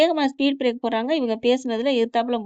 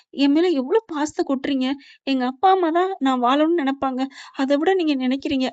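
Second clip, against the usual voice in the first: plain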